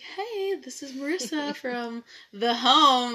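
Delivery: loud, deliberate, put-on businesslike phone voice. Retelling own phone call to an actor: imitating own put-on professional phone voice. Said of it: "I'm trying to sound very professional".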